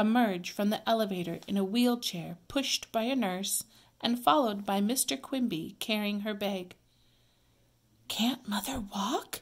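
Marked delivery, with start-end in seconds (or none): 8.1-9.4 whispered, hushed. A girl, seeing her mother arrive in a wheelchair, asks Beezus: whispered. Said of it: "she whispered".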